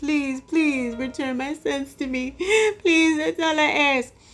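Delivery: high, tearful, sobbing, begging plea. Retelling a lady's televised plea for her sons' return, imitating someone crying. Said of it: "The lady was just crying".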